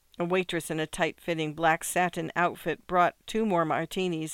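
plain

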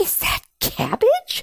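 astonished, shocked outcry, very high-pitched. Gita, viewing the narrator's garden through a device, exclaiming in shock. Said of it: "Gita exclaims in shock".

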